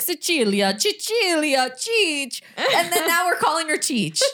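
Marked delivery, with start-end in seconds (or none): 0.0-2.4 put-on, swooping voice of an old Italian woman. Retelling how someone nicknamed the baby: imitating an old Italian woman voice. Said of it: "pretending to be, like, an old Italian woman".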